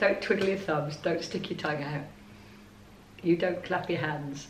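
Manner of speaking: playfully teasing. Talking to the other speaker, teasing them. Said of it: "I'm only teasing you".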